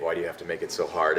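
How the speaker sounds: ordinary talk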